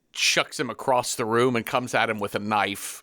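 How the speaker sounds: ordinary delivery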